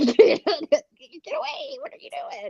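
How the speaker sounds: very high, yapping little-dog voice. Describing the doubting voice in their own head, in a yappy dog voice. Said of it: "Yappy dog voice".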